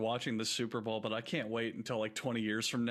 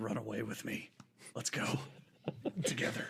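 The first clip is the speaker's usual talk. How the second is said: breathy, pleading whisper under the breath; 4 dB quieter than usual. Acting out a father with his wife present: whispering to his son. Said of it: "he just whispers to his son".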